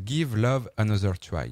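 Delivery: slow, careful, put-on English accent. Trying out a title's pronunciation with his best accent: put-on English accent. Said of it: "je vais tenter la prononciation avec mon plus bel accent anglais".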